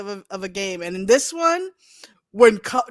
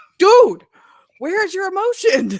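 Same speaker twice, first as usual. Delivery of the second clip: mock exasperated shout, much higher, louder; 7 semitones higher, 5 dB louder than usual. Recalling his reaction to a calm game-show host on tv, retelling screaming at the tv. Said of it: "I'm screaming at the T V".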